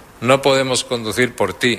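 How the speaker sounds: ordinary talk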